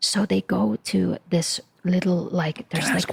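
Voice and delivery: quiet, soft speech. Telling a story about a couple's romantic evening out, lowered voice. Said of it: "why are you lowering your voice right now?".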